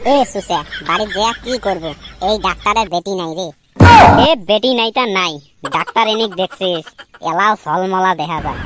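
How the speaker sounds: dropped low, mocking imitation voice.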